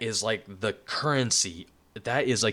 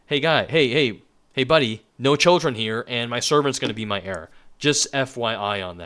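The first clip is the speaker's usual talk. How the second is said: put-on short, testy push-back, voice raised; 6 dB louder than usual. Acting out Avram complaining to God about no children: acting out a testy Avram. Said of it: "Avram's getting a little bit testy here".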